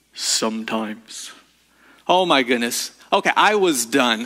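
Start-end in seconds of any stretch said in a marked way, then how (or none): 0.2-1.3 deep, low, disembodied-sounding voice. Retelling what a voice from a room answered: imitating a deep voice. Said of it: "Same deep voice said".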